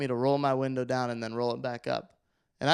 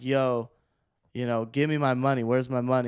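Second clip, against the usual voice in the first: normal talking voice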